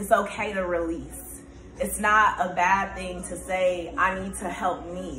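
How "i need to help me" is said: ordinary talk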